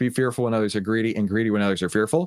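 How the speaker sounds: ordinary talk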